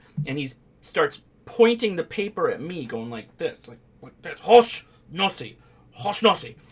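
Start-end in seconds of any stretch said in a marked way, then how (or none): 4.4-6.5 put-on shouted high in a strong Japanese accent. Explaining a nickname's origin, repeating what a man yelled while pointing, retelling a yell in a strong Japanese accent. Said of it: "to a strong Japanese accented person".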